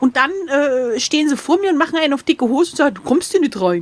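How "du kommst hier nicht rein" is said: put-on low voice, Swabian accent. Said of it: "mit so einem sch-, schwäbischen Akzent".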